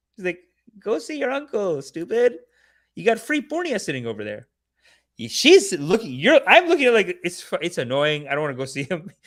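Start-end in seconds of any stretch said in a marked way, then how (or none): 0.9-4.5 acted, pushy salesy voice, high and swooping. Retelling what the grandma said about visiting the uncle: imitating grandma's scam-like pitch. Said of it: "She said it like, like it's a scam".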